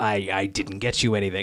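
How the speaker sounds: acted dismissive voice. Describing a film scene where he answers her gift of chocolates, retelling a dismissive line. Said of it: "sort of dismissively, a little sorrowful".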